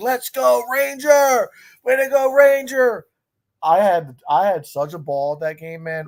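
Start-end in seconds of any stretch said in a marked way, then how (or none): 0.0-3.1 high, loud, screaming cheer. Retelling cheering from seats behind the dugout: retelling screaming from the seats. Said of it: "you're just screaming, like".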